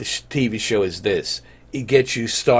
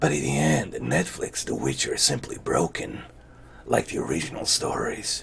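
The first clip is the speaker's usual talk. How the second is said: whispered, hushed, breathy put-on character voice; 5 semitones lower, 11 dB quieter than usual. Reading out a verdict on Netflix's The Witcher before disagreeing with it, in a fake Geralt voice. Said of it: "in a fake Geralt voice".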